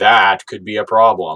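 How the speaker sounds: dark, very ominous, foreboding, doom-laden delivery. Recapping what happened, quoting Optimus: ominous Optimus impression. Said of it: "very ominously is like".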